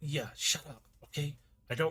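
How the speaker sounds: hushed, squabbling half-whispered retort. Retelling a scene where Aegis answers a worried companion: half-whispering as Aegis. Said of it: "Why are you whispering?".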